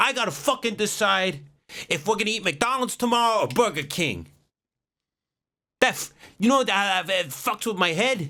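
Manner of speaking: mob-boss voice, pitched way up, very high. Speaker imagines a man sitting across from someone, venting: Tony Soprano impression. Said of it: "like he's Tony Soprano".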